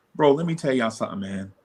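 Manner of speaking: ordinary delivery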